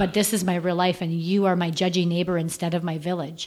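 normal talking voice

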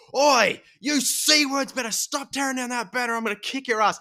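very high, thick, broad Australian holler. Retelling yelling at people tearing down a banner, retold yell in broad australian accent. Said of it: "yelled out in the most Australian accent".

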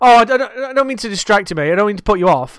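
wound-up, hyperactive, repetitive, high and loud. Retelling what a repetitive, hyperactive gentleman who comes in says: imitating a repetitive, hyperactive man. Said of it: "he's repetitive, he's hyperactive".

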